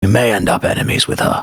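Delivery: hushed whisper. Speaking privately to Sigma in a two-person huddle: whispering. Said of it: "I'm whispering".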